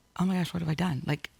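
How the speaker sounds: put-on tearful, panicked crying. Retelling looking out a hotel window after a big move: retelling own past crying. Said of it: "I literally started crying".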